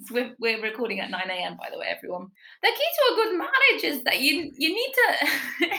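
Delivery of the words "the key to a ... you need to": poor, high, put-on Scottish accent. Retelling what an older woman said, in a bad Scottish accent. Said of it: "It's too early to be doing accents".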